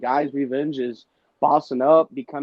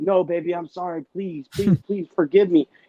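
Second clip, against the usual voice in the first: acted, high-pitched, begging, caving-in pleading voice; 5 semitones higher than usual. Acting out a man who folds after an argument: imitating a man caving in, pleading. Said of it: "a guy that can fold and be like".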